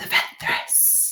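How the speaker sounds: secretive hiss in a whisper. A character reveals who they fled from, hissing the last name. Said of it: "he hisses the last name".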